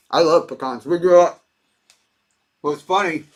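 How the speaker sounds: talking with mouth full, chewing mid-sentence. Speaker tasting a treat while chatting, talking with mouth full. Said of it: "So I'm talking my mouth full".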